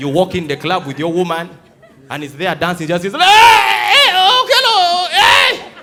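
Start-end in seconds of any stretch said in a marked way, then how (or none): 3.2-5.6 acted very slow, shrill, booming, drunken hollering. Retelling how a friend greets you in a club at 2 a.m.: imitating a drunk friend. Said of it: "When he has drunk five bottles of beer".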